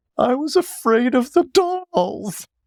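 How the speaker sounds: acted, very high-pitched speech choked out through sobs. Retelling what they told their oldest brother who burst into the bedroom, imitating sobbing speech. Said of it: "in between all my sobs".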